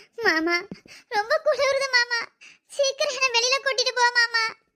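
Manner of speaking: tearful, crying, pleading voice. In a drama, Malli, trapped and cold inside, calls out to her mama, crying. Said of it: "அழாதடி".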